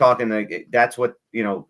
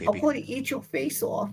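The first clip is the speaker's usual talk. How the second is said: put-on whispering voice, higher and quieter; 7 dB quieter than usual. Answering a question about how Mike Tyson whispers: Mike Tyson whispering. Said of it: "what it sounds like when Mike Tyson whispers in your ear".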